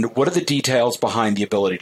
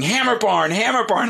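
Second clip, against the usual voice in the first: put-on very high, shrill little-kid screaming; 11 semitones higher than usual. Telling how a four-year-old acts on walking into the store, imitating a child screaming. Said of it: "she starts screaming".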